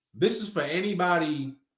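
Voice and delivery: plain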